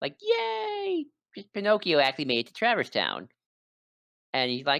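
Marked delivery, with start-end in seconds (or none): 0.2-3.3 acted, thrilled, high, bouncy, swooping excited cheer. Retelling a game scene where the cricket finds Pinocchio alive: imitating excited Jiminy Cricket. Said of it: "Jiminy's very excited about that".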